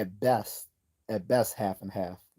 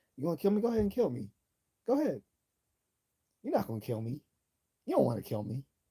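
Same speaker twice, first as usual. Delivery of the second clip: put-on smooth-talking, swooping Cuban accent; 7 semitones higher than usual. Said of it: "with the smooth Cuban accent talking".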